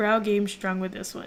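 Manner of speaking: plain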